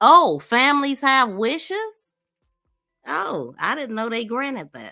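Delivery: very sarcastic, heavy, swooping mock surprise. Reacting to a rule on family wishes for autopsies: very sarcastic. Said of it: "I'm being very sarcastic".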